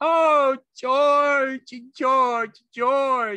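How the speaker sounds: very high, very slow, drawn-out cry. Hands over his ears, a man cries out for another man: crying out. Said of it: "And he cried".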